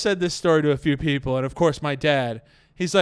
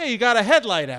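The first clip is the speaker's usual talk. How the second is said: acted, pointed, accusing delivery, pitched up; 7 semitones higher than usual. Retelling what a man said at his car window, mock-accusing tone. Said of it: "he says with accusation in his voice".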